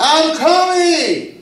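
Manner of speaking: high, slow drawn-out yell from far off. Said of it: "you hear somebody yelling".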